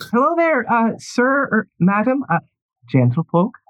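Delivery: very high-pitched doorkeeper character voice. Voicing a woman at a party's red carpet greeting arrivals: Georgie's voice. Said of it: "you do recognize that voice".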